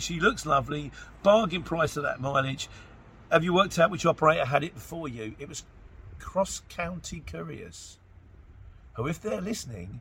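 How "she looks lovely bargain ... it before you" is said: ordinary delivery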